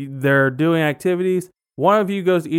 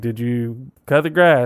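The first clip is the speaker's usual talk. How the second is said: acted grouchy, tired father voice, lower pitch; 5 semitones lower than usual. Acting out a tired factory-worker dad coming home: imitating a grumpy, tired dad. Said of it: "He's a little grumpy".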